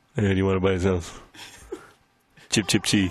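very deep, low, creepy, threatening voice. Acting out a figure who claims money is owed: put-on debt collector voice.

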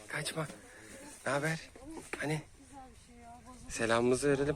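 soft, hushed, quiet talk.

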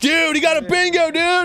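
mock amazed exclaiming. Voicing the crowd of people reacting to a bingo: imitating excited crowd people. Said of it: "all these people are like".

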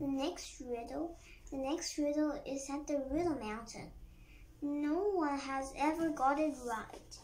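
ordinary delivery

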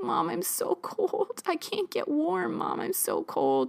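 play-acted very high, drawn-out, shivering, pleading voice. Retelling asking Mom for warmth in an unheated van: imitating own shivering plea. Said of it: "just shivering and being like".

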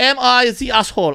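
put-on German accent. Asking a segment title as a question, put-on german accent. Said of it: "I ask in a German accent".

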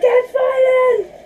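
mock alarm call, high and slow.

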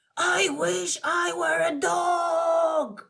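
high, very slow, drawn-out shout, "dog" stretched. Oliver makes a wish on a falling star: shouting. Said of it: "Then he shouted".

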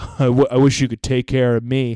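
ordinary delivery

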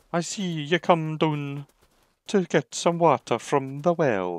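put-on Scottish accent. After announcing a scottish accent for a scene, the speaker uses a put-on scottish accent. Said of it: "we shall do a Scottish accent".

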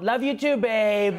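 slow, lifted, unfazed voice. Acting out someone in denial about being dumped, doing a Trump impression. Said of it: "(mimics Trump)".

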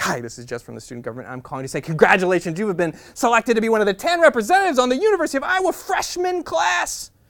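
very loud, gushing, eager, swooping enthusiastic delivery. Retelling a phone call from a woman: imitating a very enthusiastic woman. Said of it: "a very enthusiastic woman who says".

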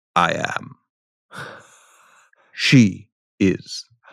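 very slow, deliberate, each word stretched out. Retelling a film scene conjugating the verb to be: Richard Burton voice. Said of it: "Rob Brydon, does Richard Burton".

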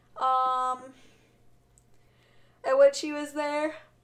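loud speech spoken through a yawn. Recalling scenes from a movie with a friend, yawning while talking. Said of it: "Sorry, I'm yawning".

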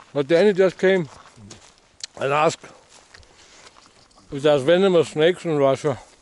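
talking while eating, with food. While playing a game, the speaker passes on someone's question, speaking while eating. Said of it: "Sorry, I'm eating".

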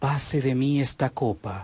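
humble, earnest, gentle pleading.

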